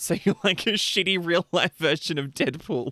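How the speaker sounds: talking through laughter. Reacting to a chat message about a rare illness, laughing while talking. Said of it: "I'm sorry for laughing".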